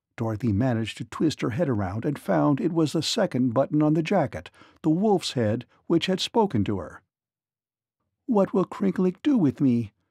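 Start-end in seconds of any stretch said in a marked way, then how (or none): 8.3-9.9 fretful, uneasy, anxious and worried. A captive girl asks a talking wolf's head about her fate, anxiously. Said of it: "she asked anxiously".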